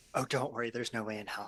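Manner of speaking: whispered voice. Answering another character privately over a channel: whispering in character. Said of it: "I just whisper".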